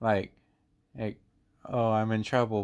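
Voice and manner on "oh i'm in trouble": normal talking voice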